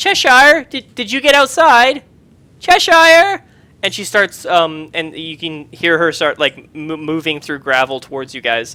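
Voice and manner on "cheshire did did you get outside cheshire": put-on shrill, loud, high elderly woman calling out. Narrating a scene where a woman calls out for Cheshire, elderly woman's voice. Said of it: "you hear an elderly woman's voice say".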